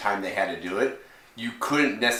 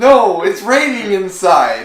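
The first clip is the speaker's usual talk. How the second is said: mock tearful whimper, higher and louder; 10 semitones higher, 11 dB louder than usual. Retelling grown men in a theater watching the movie: imitating men whimpering and crying. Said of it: "you can hear them whimpering and crying and going".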